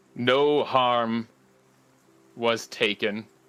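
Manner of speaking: rough, gritty, gravelly talking-tree creature voice. As game master, voicing a tree that moves its face closer to the players: very deep, gravelly voice. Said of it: "another very deep, gravelly voice".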